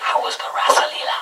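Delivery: hushed, whispered, curious tone.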